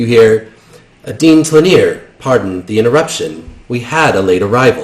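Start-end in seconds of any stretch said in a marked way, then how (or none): 1.2-4.8 smooth, polished, mechanical robot announcer voice. A lifelike robot interrupts to address the dean: smooth robotic voice. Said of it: "In a smooth robotic voice".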